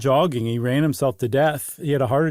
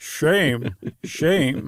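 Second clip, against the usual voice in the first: put-on Scottish-accented voice. Shaming a runner who dropped out: Sean Connery voice. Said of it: "was that Sean Connery?".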